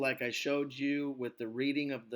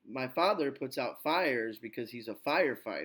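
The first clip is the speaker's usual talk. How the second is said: father, fires, firefighter punched, other words tucked away. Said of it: "See, all the nouns are stressed".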